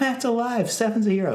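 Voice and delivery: very high, pleasant, friendly, really nice delivery. Showing how the line about a hero could sound, said in a really nice way. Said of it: "you could say that in a really nice way".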